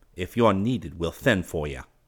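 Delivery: ordinary delivery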